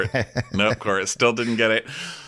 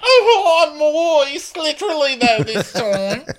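mock crying, higher and louder; 5 dB louder than usual. Retelling what Kyle said while crying: imitating Kyle crying. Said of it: "So Kyle's crying".

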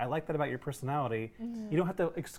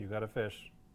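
mock deadpan monotone sarcasm, lower and quieter; 6 semitones lower, 7 dB quieter than usual. Imitating a character's dry remarks: imitating a character's monotone sarcasm. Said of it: "her monotone, like, sarcasm".

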